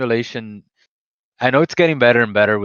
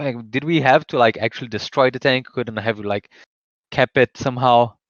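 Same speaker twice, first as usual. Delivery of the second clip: ordinary talk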